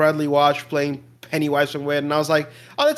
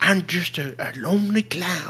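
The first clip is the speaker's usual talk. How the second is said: put-on, quieter southern clown voice; 4 dB quieter than usual. Begging the others to play clips of the clown, then doing Odd Bob clown voice. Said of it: "his clown voice".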